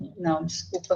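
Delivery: soft, choked-up, emotional voice.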